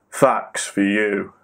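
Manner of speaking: put-on deep voice. Announcing a weekly podcast bit: put-on deep voice. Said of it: "this week I've gone with the deeper voice".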